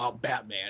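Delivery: mock deadly serious, very low grave tone. Showing how people are used to hearing a name said: very serious tone. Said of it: "in a very serious tone".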